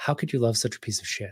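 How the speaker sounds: hushed, barely audible, quick inner voice. Speaker retelling an inner voice first heard while the kids yelled, very quiet voice. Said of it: "this really quiet voice say".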